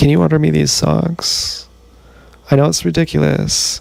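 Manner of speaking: meek, sheepish voice. Retelling asking someone downstairs to order socks: imitating own sheepish request. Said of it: "I was sheepishly like".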